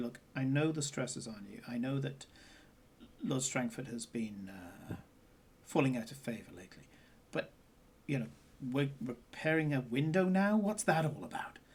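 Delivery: confiding, just-between-us conspiratorial tone. Playing a character talking to the Chamberlain, speaking conspiratorially. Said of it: "conspiratorially say".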